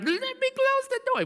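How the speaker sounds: put-on very high, sobbing, whiny crying toddler voice. Retelling how the child reacts when not let close the door, imitating a toddler crying. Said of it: "He starts crying like".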